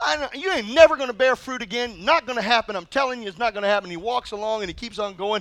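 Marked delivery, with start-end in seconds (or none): none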